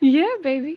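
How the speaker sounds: high, mocking, teasing tone.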